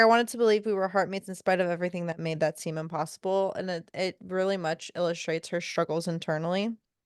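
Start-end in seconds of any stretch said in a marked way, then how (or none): none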